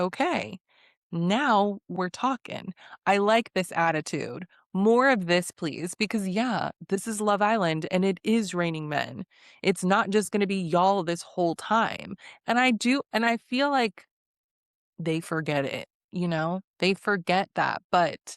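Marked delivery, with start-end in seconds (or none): none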